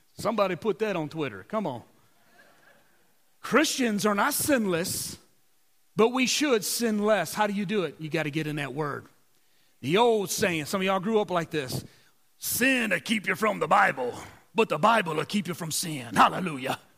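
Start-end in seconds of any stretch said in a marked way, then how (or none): 12.4-16.8 put-on Southern voice with a preacher's cadence. Quoting an old saying to the audience, in an old Southern Baptist voice. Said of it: "Said it with the old Southern Baptist voice".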